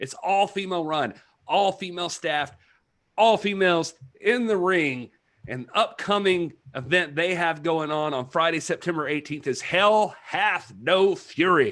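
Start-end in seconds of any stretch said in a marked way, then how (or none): 9.5-11.7 heavy rural Southern accent, leaning hard into hell. Announcing an upcoming all-female wrestling event: real redneck Southern Baptist voice. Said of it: "I got real redneck when I said hell".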